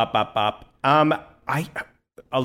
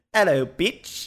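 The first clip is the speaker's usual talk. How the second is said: really bad, high Australian or New Zealand accent; 5 semitones higher than usual. Repeating a TikTok guy's greeting, imitating a really bad accent. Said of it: "I don't know if it was Australian or New I Zealand".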